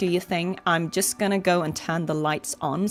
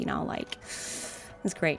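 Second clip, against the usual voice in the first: put-on hushed, breathy, whispered Valley Girl voice; 3 semitones lower, 9 dB quieter than usual. Speaker recalling show characters, showing how they talked, valley girl voice. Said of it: "they were like talking like this".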